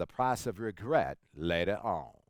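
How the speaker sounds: put-on spoken in a Texas accent. Quoting a saying Zig Ziglar said years ago, in Zig Ziglar's Texas accent. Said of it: "in his Texas accent".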